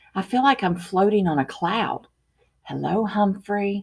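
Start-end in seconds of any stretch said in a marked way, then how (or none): 2.7-3.9 gentle, soft, hushed half-whisper. Reading a story, the narrator voices a girl greeting the pet she holds, half-whispering. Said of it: "she whispers".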